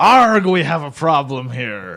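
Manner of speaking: loud, put-on stock pirate captain voice. Asking a guest if he addresses his employees like this, pirate voice. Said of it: "do you go like".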